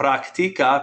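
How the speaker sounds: practica with stress on the i syllable. Spanish lesson, teacher pronouncing practica: stress on the i in practica. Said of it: "put the stress on that I".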